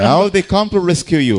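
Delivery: normal talking voice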